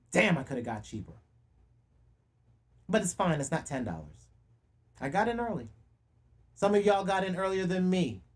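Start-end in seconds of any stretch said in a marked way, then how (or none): 0.1-5.7 irritated, audibly annoyed. Speaker tells listeners they can hear it in their voice, annoyed. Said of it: "You can hear it in my voice because I'm pissed off".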